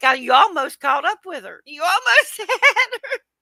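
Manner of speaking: very high voice, giggling and laughing throughout. Retelling what the laughing women in the car said: imitating people laughing while talking. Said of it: "laughing so hard".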